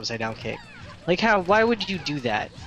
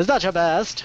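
put-on old-time radio announcer voice, higher pitch; 4 semitones higher, 4 dB louder than usual. Repeating someone's question back at them, in a 1940s radio personality voice. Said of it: "a radio personality at like in the 40s".

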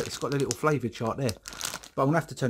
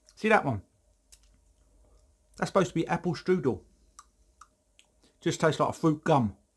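chewing, mouth-full speech, higher; 2 semitones higher than usual. Reviewing christmas sweets, talking while chewing. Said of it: "I'm still chewing".

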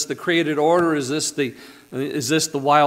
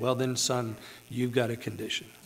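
mock deadpan delivery, much quieter; 4 semitones lower, 10 dB quieter than usual. Repeating the old security guard's line, imitating his deadpan delivery. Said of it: "he says it so straight-faced, just deadpan".

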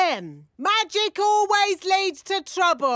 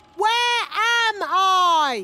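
careful, emphatic, deliberate delivery with drawn-out "I"; 2 semitones higher than usual. Asking a robot the question again after being told: asking louder. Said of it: "maybe ask louder".

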